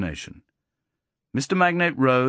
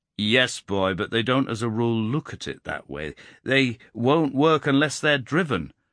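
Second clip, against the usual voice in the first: plain reading voice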